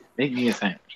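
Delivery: normal talking voice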